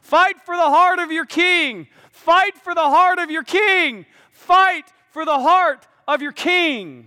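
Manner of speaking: high, loud, shouted battle rally cry.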